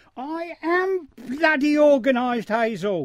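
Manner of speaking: heated, angry comeback. Told to be more organised, one character snaps back, shouting angrily. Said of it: "Don't you shout at me".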